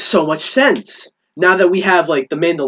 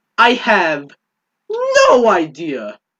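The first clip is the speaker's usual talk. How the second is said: slow delivery, voice breaking partway through. Talking about the Ahsoka Tano show, voice cracking. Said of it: "my voice cracked".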